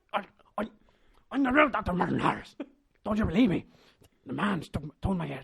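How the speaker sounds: bad exaggerated voice, shrill, loud and high. Doing an impression of a film character, recalled from the film: Liam Neeson impression. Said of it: "Even if it'll be a shit impression".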